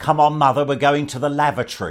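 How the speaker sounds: very loud, shrill, high-pitched calling voice. Recalling a lady who came in with her elderly mother: imitating a very loud voice. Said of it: "in a very loud voice she said".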